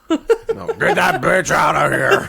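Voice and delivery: put-on rough, croaky, creaky, slow old man grumble. Acting out a senile future self rejecting an old friend: old man voice. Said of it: "I got that kind of old man".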